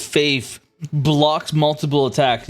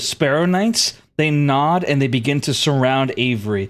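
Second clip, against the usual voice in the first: ordinary delivery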